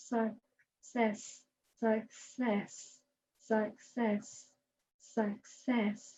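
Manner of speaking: very slow and soft, each word drawn out. Speaker demonstrates saying a word really slowly, very slow. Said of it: "let's say success really slowly".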